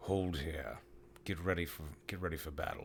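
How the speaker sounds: firm, stern, battle-ready commanding tone. Speaking to the party as these guys come out, in a stern voice. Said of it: "I tell the party in like a stern voice".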